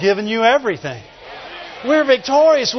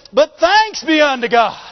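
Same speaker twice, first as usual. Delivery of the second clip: excited, high-pitched shout. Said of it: "Paul was probably shouting".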